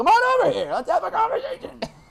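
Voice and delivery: very high, loud, angry, swooping hollering yell. Retelling standing outside the trailer calling a driver over: imitating own past yelling. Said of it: "pointing and yelling, like".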